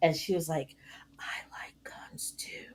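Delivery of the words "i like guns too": very quiet, slow, drawn-out whisper. Retelling a woman at work who came up after a meeting, retelling a whisper.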